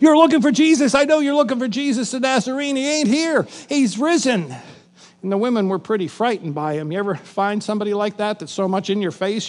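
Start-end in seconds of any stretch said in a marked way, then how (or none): 0.0-4.5 put-on excited, eager, all worked up, bursting. Acting out the young man in the tomb greeting the women: excited. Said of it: "He's all excited".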